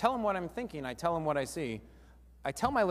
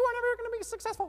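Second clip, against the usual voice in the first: very high, squeaky cartoon voice. Showing how to replay a discouraging remark in your mind, Mickey Mouse voice. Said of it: "just turn it into a Mickey Mouse tonality".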